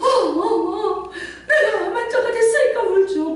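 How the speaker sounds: high wail through sobs.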